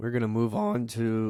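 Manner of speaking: voice cracking on a word mid-line. Moving on to the next game pick: voice cracking. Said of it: "my voice just cracked".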